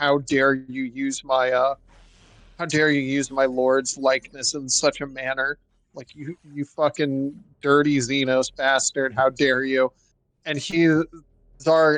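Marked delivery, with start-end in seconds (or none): none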